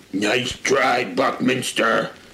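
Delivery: growled, taunting retort voice. Reading a story aloud, the fungaloid captain speaks to the narrator, growling. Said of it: "she growled".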